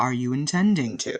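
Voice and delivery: authoritative, in-command tone. He looks at the listener and puts a question to them: much deeper, commanding voice. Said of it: "in a much deeper voice that's much more commanding".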